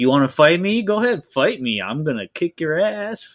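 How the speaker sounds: put-on swaggering, cocky tone. Describing a movie character's ending, imitating his swaggering taunt. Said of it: "this swagger, and he's like".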